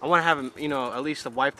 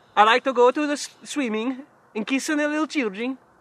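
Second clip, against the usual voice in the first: put-on sexy Scandinavian accent, much higher pitched; 10 semitones higher, 5 dB louder than usual. Trying out a voice for a character named Gartha, sexy Scandinavian Gartha voice. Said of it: "That's super sexy voice right there".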